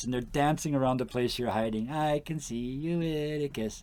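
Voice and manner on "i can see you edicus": very slow, soft, drawn-out, taunting little goblin voice. Speaker describes kids dancing around where the listener hides, little goblin voices. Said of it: "all those little goblin voices going".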